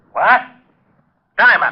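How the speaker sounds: outright, loud, high-pitched bellowing yell. Hearing bad news on the phone, yelling. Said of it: "You better watch that yelling".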